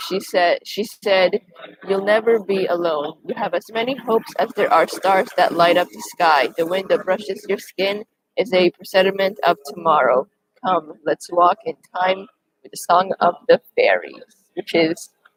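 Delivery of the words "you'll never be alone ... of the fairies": usual speaking voice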